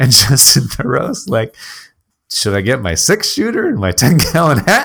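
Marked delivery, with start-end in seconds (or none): 2.3-4.9 heavy, acted sarcasm in a swooping sing-song. Recapping a movie, the speaker quotes Justin Theroux's character, retelling Justin Theroux sarcastically. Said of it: "He's sarcastic".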